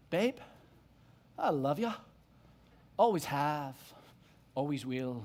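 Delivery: low, attempted Scottish accent. Repeating a movie line the speaker often says to someone, attempted Scottish accent. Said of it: "I'm going to try my best Scottish accent".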